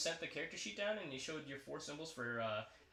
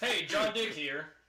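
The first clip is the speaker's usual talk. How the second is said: put-on announcer voice, higher and louder; 3 semitones higher, 8 dB louder than usual. Taking up a challenge to imitate the game's announcer: John Dick impression. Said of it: "let's see who can imitate him the best".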